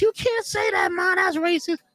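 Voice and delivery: very high-pitched, mortified and embarrassed. Retelling a friend scolding their old mother: imitating an embarrassed friend. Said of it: "she was so embarrassed".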